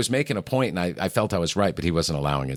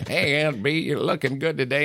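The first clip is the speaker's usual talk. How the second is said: mock goofy voice, much higher. Recalling how a coworker used to tease another with a silly character, the speaker does a goofy deputy impression. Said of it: "I used to do an Aunt Bee voice".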